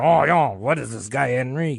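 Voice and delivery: soft, put-on French accent. Telling a history story, voicing the french people's reaction to henry, french accent. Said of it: "I like how you said Henry in a French accent".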